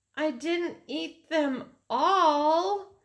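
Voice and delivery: very small, very high voice, all stretched. Fudge, confronted about the picked blueberries, answering in a very small voice. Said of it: "Fudge said in a very small voice".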